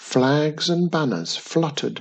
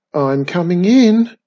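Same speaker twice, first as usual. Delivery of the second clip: gingerly cautious, raised, called-out voice; 4 semitones higher, 7 dB louder than usual. Wizardy Witch steps through the door into the tower: gingerly. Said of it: "said Wizardy Witch gingerly".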